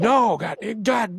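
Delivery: high, loud, screaming yell. Telling a story about a man outside, imitating someone screaming. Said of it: "he's just screaming and yelling".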